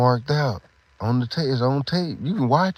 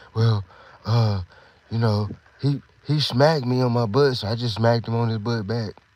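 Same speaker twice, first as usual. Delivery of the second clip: ordinary talk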